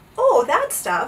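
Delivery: high, laughing, said through a laugh. The captain, warned by Bartholomew about the dreadful Oobleck, laughing. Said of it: "laughed the captain".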